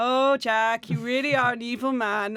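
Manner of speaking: put-on level, slow, even voice with German accent. Praising an actor as this film's unsung hero, quoting his line: Bruno Ganz flat German voice. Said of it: "He has this very flat German voice".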